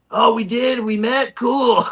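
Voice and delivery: very slow, high-pitched, stretched-out drawl. Retelling meeting an actor who never remembers him: Corey Feldman impression. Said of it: "That was a good impression".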